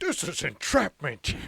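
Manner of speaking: put-on Scottish film-star accent. Retelling how a show imitated an actor: Sean Connery voice. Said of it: "they did like Sean Connery".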